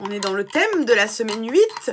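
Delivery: loud, high-pitched shouting. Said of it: "pourquoi je crie".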